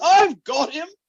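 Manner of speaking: very high, very loud, full-on shout. Retelling a cartoon scene where Sam tackles Gollum: imitating Sam. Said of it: "Sam just full on goes".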